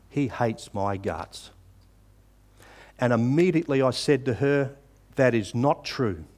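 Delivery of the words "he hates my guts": acted-out, low, cold, wounding voice. Recounting what a girl said to him once she composed herself, retelling a low, cold, hurtful reply. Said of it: "in a kind of a low, cold, hurtful voice".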